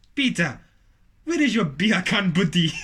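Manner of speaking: rough attempted Jamaican accent drifting into Nigerian. Asked to do a jamaican accent for a skit, the speaker tries it, attempted jamaican accent. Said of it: "That's like Nigerian".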